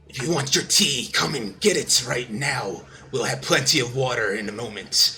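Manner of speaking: reverberating, echoing, hissing otherworldly voice laced with static. Game narrator voicing a voice heard in the players' minds, otherworldly echoing voice. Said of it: "It kind of echoes and reverberates and uh, has like a bit of like static hiss to it".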